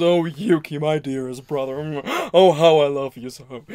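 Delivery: fabulous, bombastic delivery. Showing how the anime character Ayame sounds: imitating Ayame's fabulous bombastic voice. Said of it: "the character kinda sounds a little bit like this".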